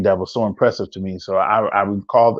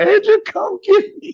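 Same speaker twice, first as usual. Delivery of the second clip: acted very high, on-the-verge-of-crying voice. Retelling calling a friend for a ride from a payphone: imitating own near-tearful plea. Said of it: "and I'm about to cry".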